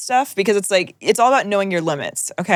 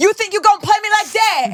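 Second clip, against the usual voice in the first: mock indignant, angry, confrontational, very high pitch; 11 semitones higher than usual. Retelling how an ex-girlfriend talked when she got mad: imitating an angry ex-girlfriend. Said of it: "when my ex-girlfriend would get mad at me".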